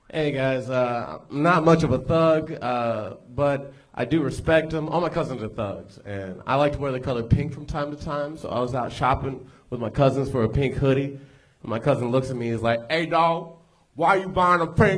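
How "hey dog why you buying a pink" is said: mumbled, pitched-up talk through a fake grill. Retelling a cousin's question while shopping: imitating a cousin with a fake grill. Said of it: "He talked like this".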